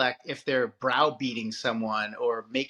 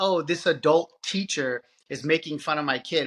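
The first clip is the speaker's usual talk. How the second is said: ordinary delivery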